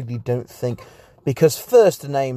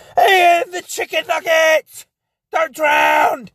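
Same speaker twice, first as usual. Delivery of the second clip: mock, shrill, very high teasing, jeering yell; 4 dB louder than usual. Retelling how a cousin yelled across the wave pool: imitating cousin screaming. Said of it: "he just screams".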